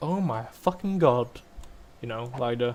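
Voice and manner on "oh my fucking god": over-the-top, drawn-out exaggerated American accent. Imitating how she swore before falling asleep, exaggerated American accent. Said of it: "It was like this very American accent, kind of like".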